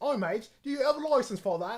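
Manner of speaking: high, loud informal English accent, dropped t's. Discussing how people imitate English accents, the speaker demonstrates an English accent impression. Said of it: "imitating English accents, and and you, you either have to go like for this".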